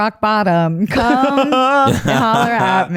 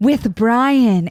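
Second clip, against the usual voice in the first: put-on raspy, wishful voice. Retelling how a character said a line in the movie: imitating a raspy, wishful voice. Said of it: "in this, like, raspy, wishful voice".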